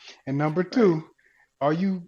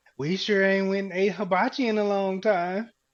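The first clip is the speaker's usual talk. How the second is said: high, slow, snide, nagging sarcasm, acted; 6 semitones higher than usual. Repeating a line in the voice it was said to them, mock-sarcastic nagging tone. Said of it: "I'm saying it in the same in the voice that it was said to me".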